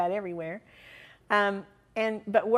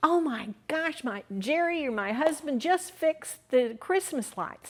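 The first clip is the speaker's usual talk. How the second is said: yelling, blurted out, pitched high; 5 semitones higher than usual. Retelling a woman running into a theater lobby: imitating someone yelling. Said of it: "she yells".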